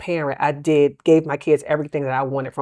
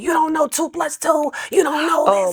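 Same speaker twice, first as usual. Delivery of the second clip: screaming, higher; 12 semitones higher than usual. Retelling helping a son with homework: imitating own past screaming. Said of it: "I was screaming to the top of my lungs".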